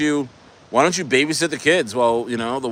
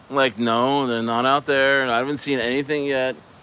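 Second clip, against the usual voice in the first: ordinary talk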